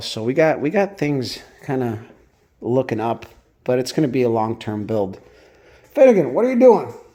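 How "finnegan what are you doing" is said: loud, high-pitched, raised shout. Pausing a Sunday update to call out to Finnegan over there, yelling. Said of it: "I keep yelling at him".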